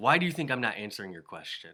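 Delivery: put-on angry, stern voice. Retelling the teacher's reply after his face turns red: imitating an angry teacher. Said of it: "he gets really mad".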